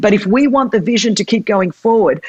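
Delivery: ordinary delivery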